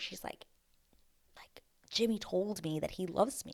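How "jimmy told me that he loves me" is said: whispered, quieter. Retelling what one contestant whispered to another: imitating a whisper. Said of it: "whispers to her".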